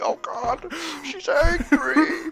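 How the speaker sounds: mock very high, very slow, drawn-out panic shriek. Acting out kids who see the crab hat: imitating kids screaming in panic. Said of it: "start screaming".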